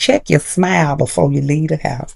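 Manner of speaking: ordinary talk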